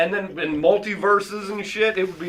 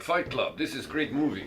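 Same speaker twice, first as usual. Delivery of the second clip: low, soft, fake Russian accent; 5 semitones lower, 8 dB quieter than usual. Acting out a country's president watching a film, mock Russian accent. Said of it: "the Chinese president was now Russian".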